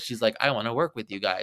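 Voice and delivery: ordinary talk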